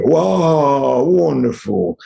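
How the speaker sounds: high, happy, delighted, drawn-out wow. Demonstrating how inner states change the voice, answering a greeting in a happy voice. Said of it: "When I'm happy".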